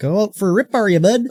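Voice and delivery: Alberta Canadian accent. Describing how people in Alberta talk, in a put-on Albertan accent. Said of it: "Alberta, it'll be like".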